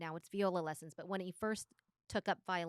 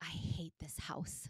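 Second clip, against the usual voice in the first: put-on mutter under breath, much quieter; 5 dB quieter than usual. Retelling what Ruby overheard her saying, mock mutter under breath. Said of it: "saying under her breath".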